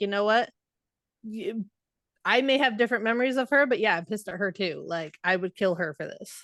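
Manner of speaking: ordinary delivery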